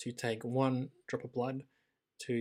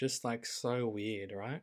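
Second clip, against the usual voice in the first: usual speaking voice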